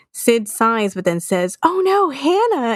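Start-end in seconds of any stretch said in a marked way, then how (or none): 1.6-2.7 fake concern, pitched way up, high. Retelling how Sid calls to his sister Hannah, in Sid's fake concerned voice. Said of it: "in a fake concerned voice".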